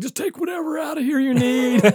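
mock very high, urgent yell. Recounting thinking they were having a heart attack, retelling their own yell. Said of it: "I'm like yelling, and I threw my wallet".

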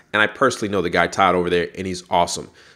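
normal talking voice

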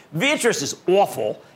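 put-on Philadelphia accent. Discussing big pharma spinoffs, slipping into a put-on philadelphia accent. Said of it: "That's my Philadelphia accent".

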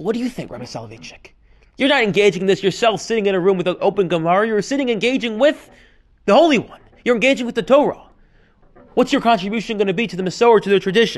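plain

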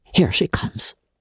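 quick, hurried, rapid whisper. A woman in an armchair hears someone coming; a rapid whisper. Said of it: "she said in a rapid whisper".

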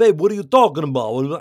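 put-on very loud, heavy, thick Brooklyn accent. Describing how an actor sounded in some shots: thick Brooklyn-like accent. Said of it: "Was that like Brooklyn accent or something?".

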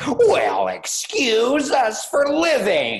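mock over-the-top shock, very high, very slow, stunned. Retelling a movie penguin's parting line: imitating stunned, shocked penguin. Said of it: "stunned, shocked attitude".

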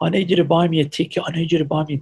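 acted sobbing, frantic, hysterical crying plea, high-pitched. Speaker retelling one of them coming back crying: imitating someone crying hysterically. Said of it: "came back to me crying hysterical".

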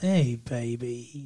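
odd, slightly English rock-star voice. Describing a character's weird voice, imitating Spike's voice. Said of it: "he's got kind of a".

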